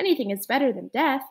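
plain

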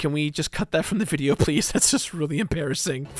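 plain

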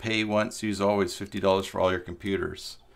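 normal talking voice

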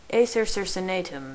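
usual speaking voice

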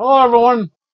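high voice, talking with mouth full, chewing. Greeting everyone after getting home, talking while eating. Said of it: "Sorry for eating".

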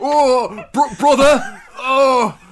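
strained put-on northern accent. Mocking the listener's imitation of an actor's performance, in a constipated northerner voice. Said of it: "like some kind of like constipated northerner".

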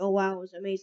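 normal talking voice

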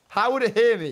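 high, loud yelled shout. Told that it can hear him, the player shouts back. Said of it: "You're shouting!".

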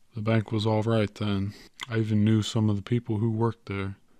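ordinary delivery

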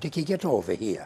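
slight Irish brogue. Retelling Nana calling from the top of the stairs, in her little brogue. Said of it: "she'd say in her little brogue".

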